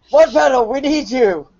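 shrill, very high-pitched shouting. A player says what their character yells during the game, yelling. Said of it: "First I would yell".

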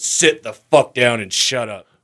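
mean, angry delivery after a pause. Retelling the reply to a cheering buddy in the crowd: imitating mean George Carlin. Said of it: "takes a pause and he goes".

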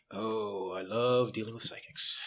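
sarcastic, meaning the opposite. Playing a character who answers another character: sarcastic. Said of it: "She says sarcastically".

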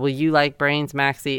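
ordinary delivery

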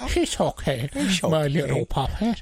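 put-on old man voice. Doing an elderly puppet maker character as Adam Sandler: Adam Sandler impression. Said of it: "you do a great Adam Sandler impression".

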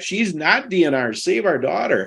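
put-on calling voice, held in. Parents recalling shouting back at nurses about their daughter; retelling a hollered reply. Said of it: "And we holler back".

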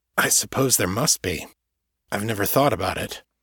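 ordinary talk

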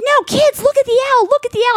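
thrilled, very high, loud excited shout. Retelling how Kevin called the kids over to the owl, imitating Kevin's excited loud voice. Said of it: "he's so excited".

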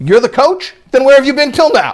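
mock, very high, half-irritated, almost annoyed voice. Retelling a rabbi's reply to a coach: imitating an almost annoyed tone. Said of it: "almost annoyed".

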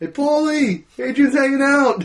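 high yell, loud, carrying far.

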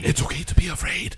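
put-on whispering movie voice. Mocking a film trailer line: Robert Downey Junior whisper acting. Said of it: "Robert Downey Junior's whisper acting".

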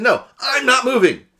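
loud, high, fed-up exasperated shouting.

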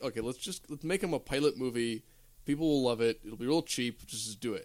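ordinary talk, nothing marked

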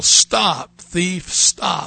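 mock, light, mild preacher's yell. Retelling slamming a hand down on the pulpit in church, re-enacting a yell. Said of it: "I slam my hand down on the pulpit and I yell".

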